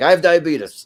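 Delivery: loud, fed-up voice. Retelling the end of the cartoon scene: imitating pissed-off Wilford Brimley. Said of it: "he just gets pissed off and he's like".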